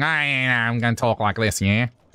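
put-on nasal voice, through the nose. Imitating how someone's voice changes when they start talking, more nasal put-on voice. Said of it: "bit more nasally".

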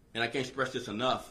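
ordinary delivery

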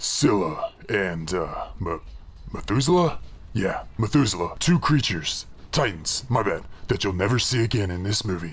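slightly deep voice. Opening a movie review with something stuck in the throat, a little deep. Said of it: "It was making me sound a little deep".

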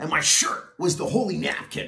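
ordinary delivery

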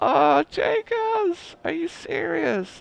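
high, slow, overwhelmed gushing.

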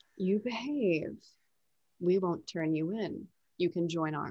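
low, hushed speaking. Speaking in character during a role-play scene, in a hushed voice. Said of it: "I keep my voice kind of hushed".

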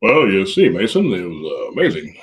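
animated, swooping put-on voice, not his own. Answering the host's question about the weekend, in a put-on other voice. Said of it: "That was my other voice".

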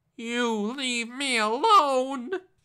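very high, very loud, shrill, frightened goblin squeak. Reading a story, the frightened little goblin speaks to Hershel: squeaky frightened goblin voice. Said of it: "He squeaked".

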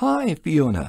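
cheerful and happy, pitched very high. Narrator reads Alan greeting his granddaughter Fiona, said happily. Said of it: "Alan said happily".

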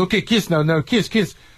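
put-on heavy Russian accent. Retelling a film director coaching two actors through a kiss scene, thick Russian accent. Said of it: "the director's got like a thick Russian accent".

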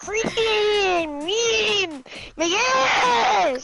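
high, mocking parody of a way of talking. Mocking how the other player just sounded, mimicking the other player. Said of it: "You just were like".

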